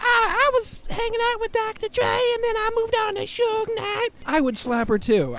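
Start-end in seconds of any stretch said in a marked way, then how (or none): 0.0-4.1 very high, funny woman's voice. Mimicking a woman from her interviews, imitating a woman who sounds like Mr. Hankey. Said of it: "why does she sound like Mr. Hakey from South Park?".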